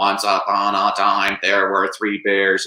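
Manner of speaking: flat, monotone, robotic voice. Reading a story to their kids, who asked for a robot, robot voice. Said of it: "do it like a robot".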